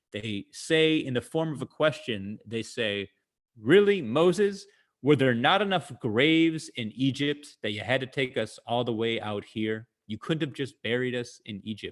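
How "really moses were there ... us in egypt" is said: usual speaking voice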